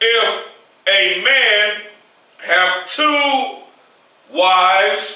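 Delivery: very slow, halting, word-by-word reading. Rereading a Deuteronomy verse after asking for it very slow: very slow. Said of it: "Read it very slow".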